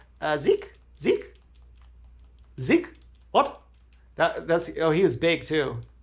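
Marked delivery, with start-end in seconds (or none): 0.2-3.6 high, swooping, sing-song calling repeated over and over. Retelling how he asked for decoration money: imitating how he talked. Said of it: "just the way he said it, he's like".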